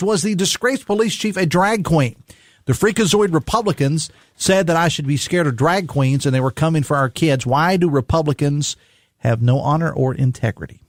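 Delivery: ordinary talk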